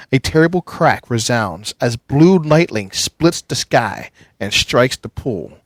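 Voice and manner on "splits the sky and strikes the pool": ordinary delivery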